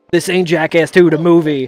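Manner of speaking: put-on Delaware County (Delco) accent. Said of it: "and with the Delco accent".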